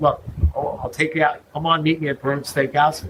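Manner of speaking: plain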